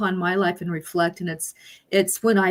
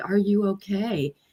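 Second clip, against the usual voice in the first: mock kindly, gentle, concerned caring tone. Retelling asking a crying ex-spouse a question, imitating a caring tone. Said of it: "very caringly".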